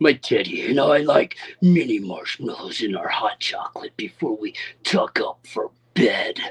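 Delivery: nasty, mean-sounding, meanest voice possible. Asked to read a text aloud as meanly as possible, meanest voice. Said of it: "In my meanest voice".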